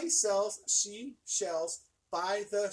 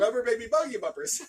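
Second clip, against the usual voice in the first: clean, unbroken run in one go; 2 semitones higher, 4 dB louder than usual. Saying a tongue twister after being asked: saying it fast. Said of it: "But now say it fast".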